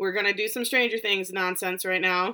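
ordinary talk

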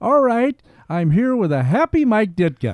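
loud, bright, happy, swooping reporter delivery. Retelling a reporter's on-air line after a shouting match: imitating Johnny Morris, smirking happily. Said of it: "gets a little happy sma-, face on".

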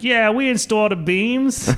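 clumsy put-on Italian accent, very high. Mimicking Italian dudes sitting around after watching The Sopranos, bad Italian accent. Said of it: "I don't do a good Italian accent".

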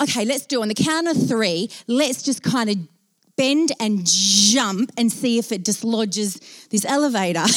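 ordinary delivery

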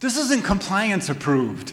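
high-pitched, slow, scared cry. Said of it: "I got scared".

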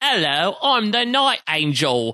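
put-on British accent. Mocking someone's put-on accent as if in an Oliver Twist production. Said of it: "this feels like you're doing a production of Oliver Twist".

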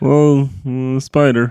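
put-on depressed spider voice. Playing Morbo the spider, replying to being told he sounds depressed, in a depressed spider voice. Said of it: "You sound fucking depressed".

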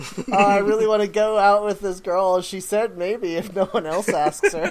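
put-on high, sad, mopey kid voice. Teasing another speaker who wants an Animal Crossing game, imitating a sad kid. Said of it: "like the saddest kid like a week before the prom".

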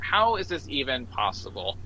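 ordinary talk

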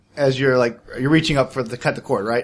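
ordinary talk

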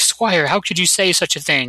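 plain

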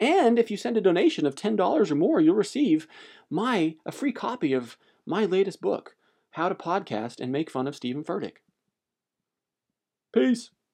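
radio broadcast announcer voice.

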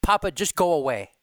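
loud, dead-serious voice with no joking. Retelling what an irritated three-year-old grandchild said: imitating a serious tone. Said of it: "with this really serious tone".

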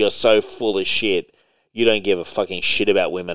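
usual speaking voice

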